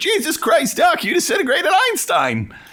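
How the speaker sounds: very high, whiny voice with big swoops. Talking about Back to the Future, quoting the film, whiny Marty McFly voice. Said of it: "I know why I sound so fucking whiny".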